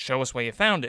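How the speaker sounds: ordinary delivery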